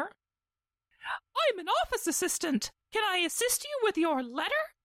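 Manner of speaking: stupid squeaky voice, very high, swooping. Answering the people who just found him, stupid Clippy voice. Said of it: "Every time I do the stupid voice".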